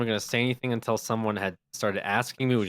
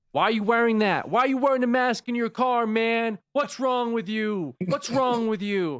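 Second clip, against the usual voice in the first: put-on, very high-pitched, furious angry yelling; 11 semitones higher than usual. Retelling a man in the next car yelling at the speaker, retelling a yell. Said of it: "he just starts yelling at me".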